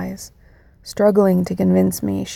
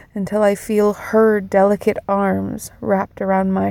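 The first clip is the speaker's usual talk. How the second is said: ordinary delivery, nothing marked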